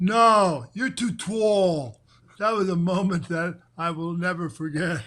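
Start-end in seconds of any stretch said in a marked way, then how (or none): 0.0-2.0 put-on thick Philadelphia accent, dragged out very slowly. Retelling how Patty answered when you asked her to dance, in Patty's deep Philadelphia accent. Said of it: "she says in a deep Philadelphia accent".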